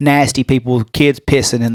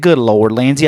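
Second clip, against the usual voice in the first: ordinary delivery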